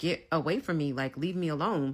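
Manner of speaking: ordinary talk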